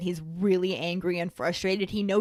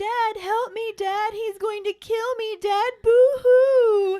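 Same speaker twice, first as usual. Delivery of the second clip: very high, loud sobbing whine, drawn-out boo-hoo; 7 dB louder than usual. Mimicking a book character begging his dad for help, imitating Dudley whining. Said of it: "that's how it sounded in my head".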